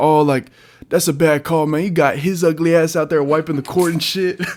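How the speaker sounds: put-on Memphis-accented speech. Describing a man getting in the referee's face, imitating his Memphis accent. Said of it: "like he's talking like that".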